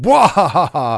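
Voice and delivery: loud, sudden laughing yelp. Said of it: "and you just go".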